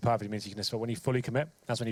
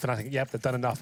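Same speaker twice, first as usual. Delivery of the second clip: plain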